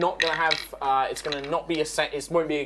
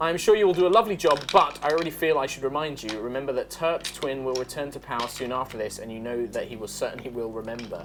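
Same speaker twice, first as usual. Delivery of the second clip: normal talking voice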